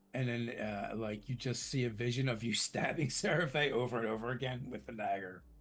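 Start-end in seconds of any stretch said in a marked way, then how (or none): none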